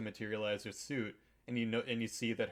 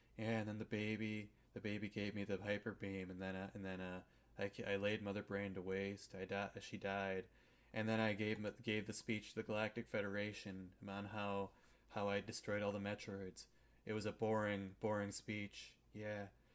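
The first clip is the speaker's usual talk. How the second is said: acted flat, uncaring, couldn't-care-less monotone; 6 dB quieter than usual. Retelling a game character's monologue: imitating a flat, uncaring monotone. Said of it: "She sounds like she doesn't give a shit at all".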